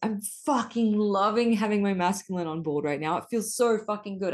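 thrilled, excited, gushing burst of enthusiasm. Retelling a conversation, the speaker re-enacts their own loud exclamation. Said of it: "I loudly exclaimed".

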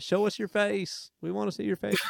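put-on Iowa accent. Imitating Iowa fans who demand to see a face: good Iowa accent. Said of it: "It's good Iowa accent".

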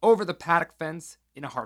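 ordinary delivery, nothing marked

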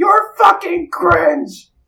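very high, screeching monster shout. Voicing a demon yelling from the horizon: yelling monster voice. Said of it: "you can hear it in the horizon yelling".

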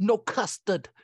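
exaggerated, laid-on put-on New Jersey accent. Quoting Corey's mom from the movie, imitating a Jersey accent. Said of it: "Corey's mom did too".

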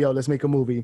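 ordinary delivery

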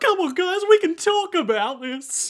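play-acted, pathetic, very high, tearful pleading. Retelling a story where goons corner Jacuzzi Splot in an alley, Jacuzzi Splot fake crying. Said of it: "And he's crying".

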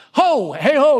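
sailor's calling cry, very high and loud. Explaining a word's translation, the speaker demonstrates it: sailor calling out 'ho!'. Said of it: "more like a sailor who's saying like".

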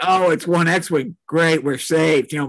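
ordinary talk

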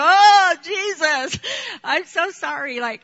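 put-on very slow, high, tearful crying voice. Retelling praying at an altar as a child: imitating own past crying. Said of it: "and I started crying, like".

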